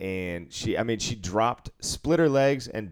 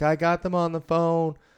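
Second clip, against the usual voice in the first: play-acted high yell, as if across a long distance; 6 semitones higher than usual. Retelling how V yelled across the pits to the speaker, retelling V's yell across the room. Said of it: "she yelled all the way across pit three to pit four".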